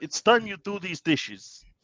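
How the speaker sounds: very high, squeaky Russian accent. Asked for a Russian impression, playing a superhero: Colossus Russian accent impression. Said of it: "That's not bad".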